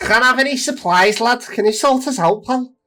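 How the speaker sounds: put-on loud, very high-pitched Liverpool accent. Playing a game, asking someone for supplies for the villagers: Liverpool accent. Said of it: "That's exactly how he sounds as well".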